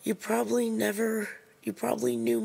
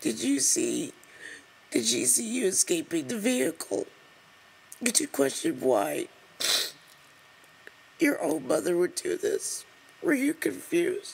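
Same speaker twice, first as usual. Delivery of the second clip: tearful, crying delivery. Reading a story aloud and asking about it, crying. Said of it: "I'm crying right now".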